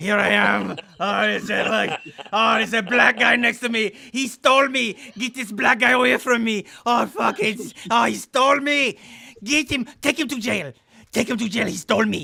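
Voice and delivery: put-on puppet dog voice. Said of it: "He sounds a lot like Triumph".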